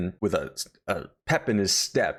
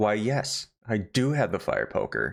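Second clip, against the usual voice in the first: put-on pleasant polite tone. Retelling a woman's polite answer about the fire poker: imitating a pleasant tone. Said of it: "a pleasant tone".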